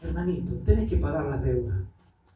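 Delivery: mock tender, low, loving, merciful voice. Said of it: "con voz de amor y de misericordia".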